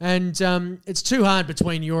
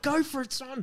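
fond, light, high, encouraging cheer; 7 semitones higher, 7 dB quieter than usual. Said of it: "I'm like".

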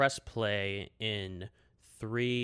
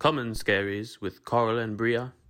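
louder put-on British voice; 8 dB louder than usual. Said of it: "we'll do it in Colin Firth's voice".

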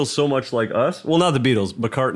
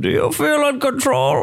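very high-pitched put-on comic-book villain voice; 13 semitones higher than usual. Trading movie villain voices with another speaker, doing a Bane impression. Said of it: "So that's Bane".

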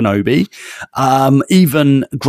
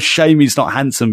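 usual speaking voice

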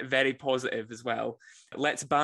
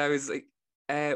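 ordinary talk, nothing marked

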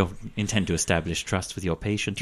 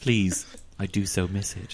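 put-on creepy killer voice, quieter; 6 dB quieter than usual. Voicing a patient approached by a healer: Hannibal Lecter voice. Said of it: "It's Hannibal Lecter".

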